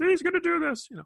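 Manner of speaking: very high-pitched felt frog puppet voice. Mimicking people who say it, the speaker uses a Kermit the Frog voice. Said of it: "like Kermit the Frog".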